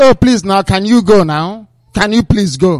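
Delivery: ordinary talk, nothing marked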